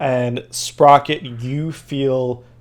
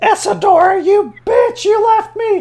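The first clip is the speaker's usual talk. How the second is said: very high, loud, frantic panicked crying out; 6 dB louder than usual. Voicing a panicking hag who cries out at her sister: panicked crying out. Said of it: "she's panicking. You hear her cry out".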